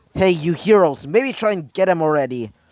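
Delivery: plain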